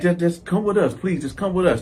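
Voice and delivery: ordinary talk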